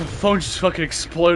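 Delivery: plain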